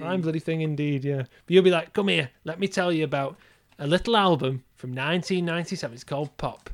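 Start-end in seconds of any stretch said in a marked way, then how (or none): 1.9-6.7 put-on drunk, boozy, insistent rambling voice. Imitating the other speaker as a drunk old man in a pub: drunk impression of a friend. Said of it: "is that your impression of me?".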